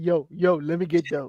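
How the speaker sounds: slow, laid-back, deep bass voice. Imitating Trey asking for the shoes: imitating Trey's bass voice. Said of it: "Trey got that bass in his voice".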